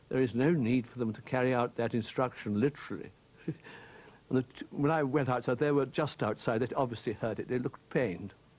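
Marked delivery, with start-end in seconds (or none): none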